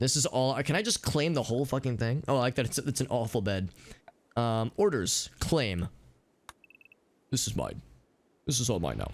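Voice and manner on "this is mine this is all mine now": put-on very low, swooping deep voice. Claiming the whole thing for themselves, in a put-on deep voice. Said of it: "I don't know why I'm using like a deep voice".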